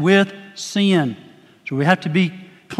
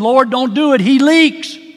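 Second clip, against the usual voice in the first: high, squeaky, little piped-up voice; 5 semitones higher than usual. Retelling how a deacon's granddaughter piped up during his prayer, high, squeaky voice. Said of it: "piped up in a high, squeaky voice".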